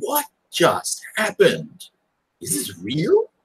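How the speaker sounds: dazed, shell-shocked tone. Player giving their character Lawrence's reaction to a shocking event, stunned. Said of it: "Lawrence is just stunned".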